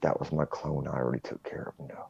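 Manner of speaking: close, secretive, hushed, breathy whisper. Retelling what the brother-in-law leaned in and said: imitating a whisper. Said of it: "leans into me and whispers".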